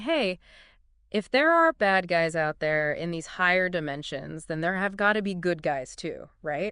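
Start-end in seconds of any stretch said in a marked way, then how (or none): none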